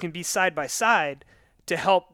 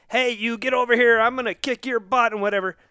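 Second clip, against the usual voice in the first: mock, acted-out yelling, pitched higher; 6 semitones higher, 3 dB louder than usual. Speaker describing a hypothetical man yelling across a parking lot: retelling a stranger's yell. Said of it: "And he's yelling".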